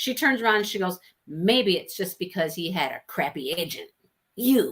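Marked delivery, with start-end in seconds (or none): 1.3-4.7 mock bratty child voice, spiteful. Retelling a character's retort to her mother: imitating a bratty child. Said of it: "a bratty child that's mad at their parent".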